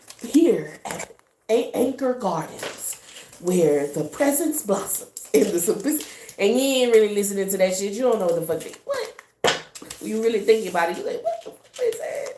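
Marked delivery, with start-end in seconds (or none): 0.2-6.1 slow TV commercial voiceover announcer voice. Telling someone a phrase sounds like a background ad, doing a commercial announcer voice. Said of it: "the commercial be on in the background and they just be saying".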